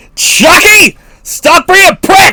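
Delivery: put-on angry yelling voice. Doing an impression of Kevin Smith yelling at his dog: Kevin Smith yelling at his dog. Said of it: "like Kevin Smith yelling at his fucking dog".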